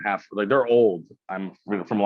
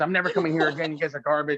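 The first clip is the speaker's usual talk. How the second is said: acted-out, high, fed-up, angry outburst, flipping out; 8 semitones higher than usual. Describing Starbucks customers flipping out over a bad experience: imitating an angry customer. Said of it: "people flip out about a bad experience".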